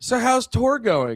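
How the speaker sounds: clueless interviewer voice. Mocking a clueless interviewer asking a band a question: imitating a clueless interviewer. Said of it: "every dog shit interview I watch where they'll be like".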